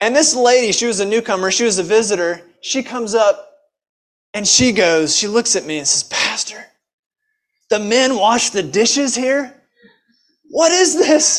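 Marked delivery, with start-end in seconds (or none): 6.0-11.4 astonished, disbelieving, mock incredulous tone. Retelling a newcomer's question to the pastor: imitating someone in disbelief. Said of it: "She couldn't believe it".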